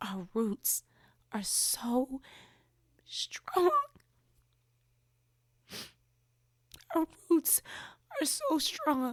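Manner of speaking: crying through a hoarse voice, drawn out. Talking about the feeling left after a weekend with family, crying, hoarse voice. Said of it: "I'm crying with a hoarse voice now".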